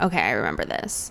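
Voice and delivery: low, deadpan voice, dropped way down. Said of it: "He was like".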